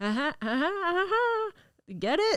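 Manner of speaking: cheesy, over-the-top, high, hammy sitcom delivery. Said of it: "so it's a bit more like".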